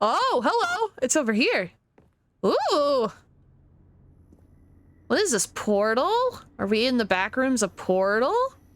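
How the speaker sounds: deliberately annoying, grating, goofy put-on voice. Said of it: "the most annoying voice I think I've ever managed to pull off".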